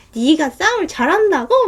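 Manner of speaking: sneering, mocking tone. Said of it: "그래갖고 제가 막 비웃었거든요".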